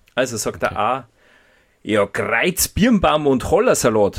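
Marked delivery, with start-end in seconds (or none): 2.0-4.2 loud, raised Bavarian dialect character voice. Reading out answer A of a riddle in a Bavarian Pumuckl voice. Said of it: "ich muss jetzt mit einer bayerischen Stimme und mit der Pumuckl-Stimme sprechen".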